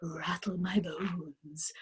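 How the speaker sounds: eerie, ghostly, low, hushed, spooky voice. A talking parrot answers Matilda's question, in a spooky voice. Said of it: "giving a wonderful imitation of a spooky voice".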